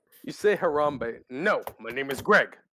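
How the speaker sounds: low, deep put-on gorilla voice. Voicing a talking gorilla who corrects a player: talking gorilla voice. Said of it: "how perfect of a voice that is for a talking gorilla".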